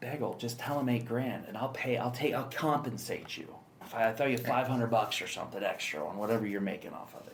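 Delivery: ordinary delivery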